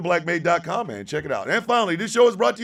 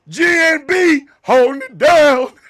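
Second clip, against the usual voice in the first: over-the-top put-on announcer voice, higher and louder; 8 semitones higher, 6 dB louder than usual. Pretending to host the show as a third-person alter ego: exaggerated put-on host voice. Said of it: "an exaggerated ass, uh, voice".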